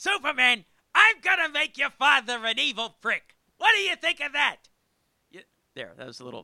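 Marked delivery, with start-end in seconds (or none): 0.0-4.6 very high, very loud, shrill screeching yell. Voicing the villain from the animated series: Gilbert Gottfried voice. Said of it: "on animated series, it was Gilbert Godfrey".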